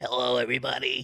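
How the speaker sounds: animated monster lady voice. Asked to say something, greet everybody in a Monsters, Inc. character voice. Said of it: "I thought that was the voice you were going with there".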